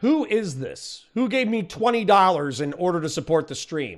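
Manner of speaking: fierce, angry, accusing tone. Asking who sent a donation to the stream, sounding angry. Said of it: "I sound angry".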